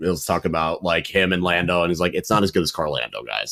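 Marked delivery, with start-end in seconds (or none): 2.1-3.5 bone-dry, matter-of-fact, pitched low. Retelling a driver's social media comment about him and Lando: imitating Oscar Piastri's dry delivery. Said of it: "His dry delivery is what sells it".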